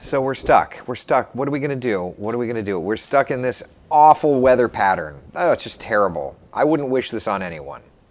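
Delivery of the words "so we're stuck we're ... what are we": ordinary delivery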